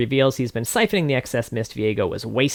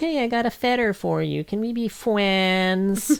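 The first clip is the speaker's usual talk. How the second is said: appeasing, sweetened tone, pitched up, "friends" drawn out; 9 semitones higher than usual. Speaker recounts a character going back to Viego: Viego voice. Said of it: "He's trying to sound like him".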